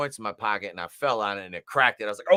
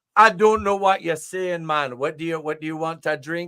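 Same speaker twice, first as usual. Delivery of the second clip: put-on Jamaican accent, much higher pitch; 6 semitones higher than usual. Telling a story about ordering at a swim-up bar in Jamaica; imitating the Jamaican bartender. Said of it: "And the Jamaican's like".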